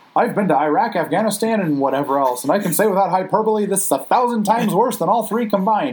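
high news anchor voice. Recapping a cartoon episode about Bart and Krusty, doing a Kent Brockman impression. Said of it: "that's a good impression".

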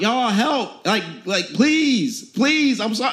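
frantic, desperate screaming in a begging tone. Preaching, asking listeners to picture being Joseph, retelling Joseph screaming, begging. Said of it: "He's screaming out".

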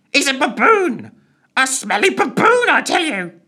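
very high, loud, weird screeching bird voice. Reading a story, the narrator voices a character speaking in a weird screeching bird voice. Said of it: "in the weird, screeching bird voice".

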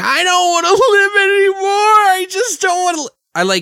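very high, badly acted screaming breakdown. Reenacting an actress's breakdown scene from a movie, reenacting a screaming movie breakdown. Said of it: "reenacting my shitty version of her acting".

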